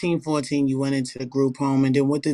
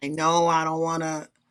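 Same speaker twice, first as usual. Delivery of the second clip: put-on whiny, blubbering, crying child's voice; 3 semitones higher than usual. Asking whether the other speaker cried refusing to leave: mock crying child. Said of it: "crying, like".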